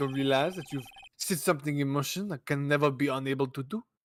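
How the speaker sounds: put-on French accent. Actor in a scripted scene, speaking with a French accent. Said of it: "I think your French accent got in the way there".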